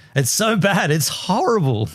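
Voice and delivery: ordinary talk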